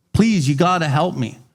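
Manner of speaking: play-acted frantic, desperate pleading. Speaker retells a man in a book begging the doctor for help, imitating begging. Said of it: "he begs the doctor".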